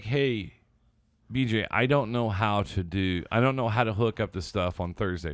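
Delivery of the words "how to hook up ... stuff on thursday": ordinary talk, nothing marked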